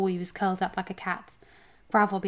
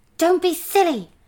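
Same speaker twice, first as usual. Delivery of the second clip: hissed words, very high and loud; 10 semitones higher, 9 dB louder than usual. Twigleg, hauling the suspicious dwarf along, answers him hissing. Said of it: "hissed Twigleg".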